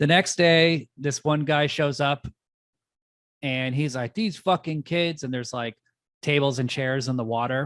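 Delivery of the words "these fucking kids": acted angry, irritated outburst, pitched up and pissed off. Retelling a movie scene where a guy finds a mess: imitating someone pissed off. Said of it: "he's all pissed".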